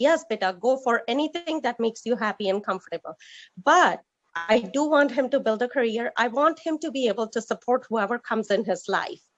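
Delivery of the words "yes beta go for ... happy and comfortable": ordinary talk, nothing marked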